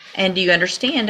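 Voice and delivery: ordinary delivery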